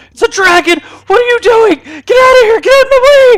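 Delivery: shrill, very loud, high, rising screech. Voicing a character who tried to bowl someone over: screaming. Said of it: "He starts screaming".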